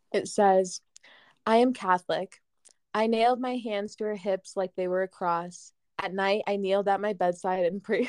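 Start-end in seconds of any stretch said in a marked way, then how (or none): none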